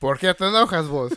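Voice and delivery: put-on Salvadoran Spanish accent. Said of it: "you sounded so Salvi right there".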